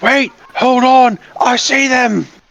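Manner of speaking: very high, drawn-out guard shout. Voicing a guard who spots the returning group at the gate: guard shouting. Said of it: "One of them shouts".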